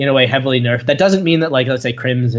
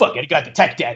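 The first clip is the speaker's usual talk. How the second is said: fast, cocky put-on gamer voice. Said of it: "he's like".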